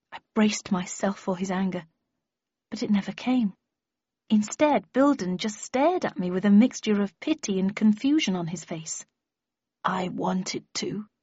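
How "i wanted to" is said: murmured, hushed, quiet and soft. Bilden answering the narrator instead of getting angry, in a quiet voice. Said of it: "he said in a quiet voice".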